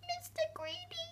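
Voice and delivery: very high, soft, frightened squeak. Reading a story, the narrator voices a frightened Mister Greedy answering a giant, in Mister Greedy's frightened squeak. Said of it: "he squeaked".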